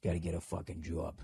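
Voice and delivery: very quiet, muttered Boston accent. Coaching listeners working on Boston accents, the speaker demonstrates a Boston accent. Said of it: "for those of you working on your Boston accents".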